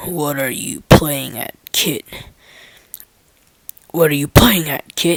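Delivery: growled, low and loud. Reading a story aloud, voicing a man who growls at the narrator: growling. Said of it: "growls at me".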